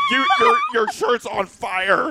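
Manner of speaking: yelling, high-pitched and slow.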